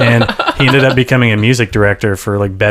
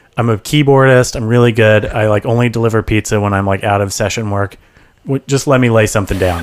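usual speaking voice

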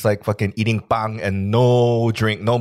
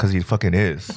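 ordinary delivery

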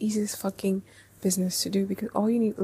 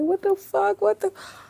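play-acted, very high, shrill screaming burst; 12 semitones higher, 4 dB louder than usual. Recounting being in the bathroom and starting to scream, retelling a scream. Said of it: "I start screaming".

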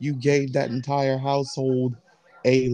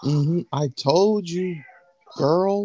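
sassy hair-salon diva voice, full of sass; 4 semitones higher than usual. Imagining a character as a sarcastic hair salon diva: sassy salon diva voice. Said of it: "I just imagine Alice saying".

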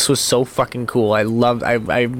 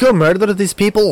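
put-on Scottish accent, pitched up; 8 semitones higher, 4 dB louder than usual. Describing a streaming show, the speaker voices the cat in the cat's scottish accent. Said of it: "the cat has a Scottish accent".

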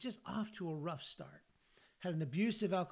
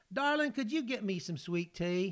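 attempted, fake American Southern accent; 4 dB louder than usual. Retelling ordering food from a woman, trying out a put-on Southern accent. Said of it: "say something Southern".

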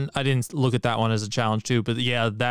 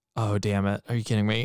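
quiet put-on muttering under breath. Retelling how he reacted after being told no, muttering under his breath. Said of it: "he mutters into his microphone, like under his breath".

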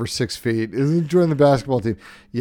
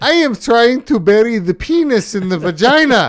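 very high, loud, put-on Swedish accent; 11 semitones higher, 6 dB louder than usual. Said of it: "with some fake Swedish accent".

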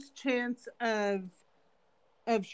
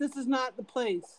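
ordinary talk

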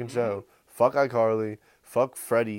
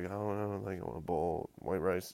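put-on timid shy-kid voice, very quiet and low; 4 semitones lower, 11 dB quieter than usual. Retelling how a shy middle brother answered a girl's question; imitating a shy boy. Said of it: "He's like".

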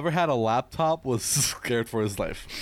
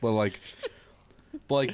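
ordinary delivery

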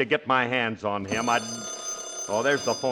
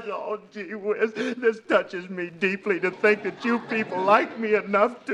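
fake crying, higher; 9 semitones higher than usual. A father thanks the folks for a surprise party when nobody is there, fake crying. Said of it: "You can stop crying".

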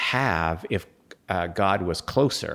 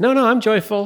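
very high, loud, strained forced cheer through gritted teeth; 8 dB louder than usual. Acting out someone denying their joylessness: mock joyful through gritted teeth. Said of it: "through gritted teeth".

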